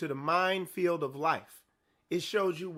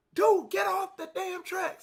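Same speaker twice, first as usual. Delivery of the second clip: mock very high-pitched, shrill yell; 13 semitones higher than usual. Recounting a warning to a man, the speaker acts out a yell. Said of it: "and I'm yelling at him".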